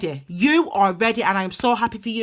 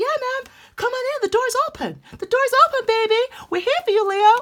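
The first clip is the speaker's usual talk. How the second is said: very high, put-on American accent; 14 semitones higher than usual. Speaking to viewers, voicing the universe welcoming leo, mock american accent. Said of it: "That was actually kind of an American accent".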